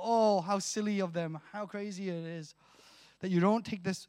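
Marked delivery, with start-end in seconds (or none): none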